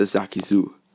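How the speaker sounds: plain reading voice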